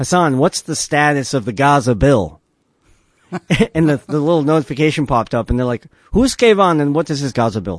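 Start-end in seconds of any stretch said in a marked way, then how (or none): 6.1-7.8 badly butchered Hebrew accent with swooping pitch. Retelling officials questioning a phone notification, in a horrible Hebrew accent. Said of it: "that's a horrible Hebrew accent".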